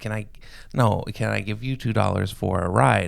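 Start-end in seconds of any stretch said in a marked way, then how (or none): none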